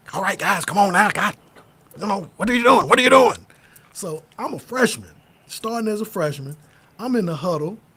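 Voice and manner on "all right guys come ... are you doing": loud, fast, rapid-fire coach-style chatter. Retelling a coach in a huddle: imitating Coach Jones talking fast. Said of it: "Coach Jones talks fast".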